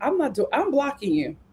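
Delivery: ordinary talk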